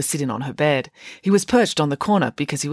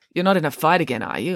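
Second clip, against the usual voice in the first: ordinary delivery, nothing marked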